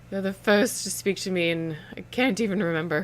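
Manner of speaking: deeply hurt, very upset, yet dry tone. A narrator voices a woman talking with the group, in a very upset but dry tone. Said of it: "In a very upset but dry tone".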